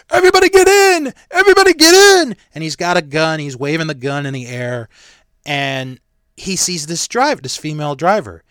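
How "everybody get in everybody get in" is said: very high, very loud, shrill scream. Retelling a story of a man waving a gun, mock screaming. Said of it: "he's screaming like".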